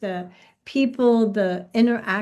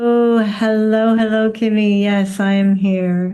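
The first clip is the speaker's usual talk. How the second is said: sexy voice, getting louder; 6 dB louder than usual. [name] greets the coach Kimmy at the start of a call, in a super sexy voice. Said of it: "you just said that in a super sexy way".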